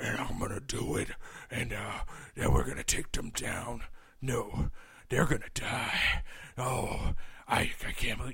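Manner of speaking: slow, whispered gruff tough-guy movie voice. Mocking an actor's voice in a movie: mocking an actor's gruff voice. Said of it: "he can't break the fucking voice in the fucking character".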